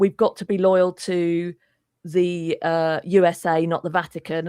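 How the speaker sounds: usual speaking voice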